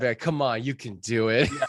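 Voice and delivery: put-on, aggressive Australian accent. Recalling an ad James made, imitating James's aggressive Australian accent. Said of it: "aggressive like uh, Australian accent".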